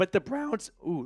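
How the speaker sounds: soft voice that breaks mid-word. Discussing the Browns' penalties, the speaker's voice cracking mid-sentence. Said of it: "voice crack".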